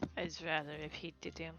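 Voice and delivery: muttering under the breath. Speaking in character as someone is about to tell a tale: muttered under her breath. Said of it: "like, under her breath".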